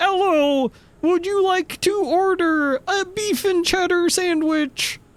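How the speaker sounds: very high-pitched cartoon robotic computer voice. Speaker acts out an order-taker made to sound like Bonzi Buddy, in a Bonzi Buddy voice. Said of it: "make it sound like Bonzi Buddy".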